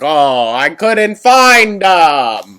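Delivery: very loud, slow cartoon vampire voice, em drawn out. Imagining what another person will say, in a Hotel Transylvania Dracula voice. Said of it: "he sounds like Dracula from Hotel Transylvania".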